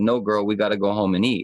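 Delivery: plain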